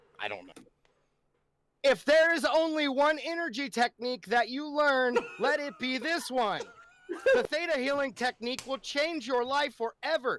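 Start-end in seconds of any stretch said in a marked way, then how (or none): 1.8-10.4 forceful, very emphatic, exclamatory delivery. Reading a quoted line aloud, very emphatic. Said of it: "I don't know why I'm saying it so emphatically".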